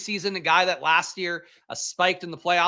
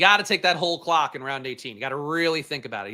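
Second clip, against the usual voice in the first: sarcastic delivery, pretending to be earnest; 3 semitones lower than usual. Commenting on a drafter taking the whole clock in round eighteen: sarcastic. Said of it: "he says sarcastically".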